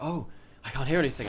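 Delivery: put-on conspiratorial whisper. Retelling what Sam said while putting on headphones: imitating Sam's conspiratorial whisper. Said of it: "getting all conspiratorial and whispering like".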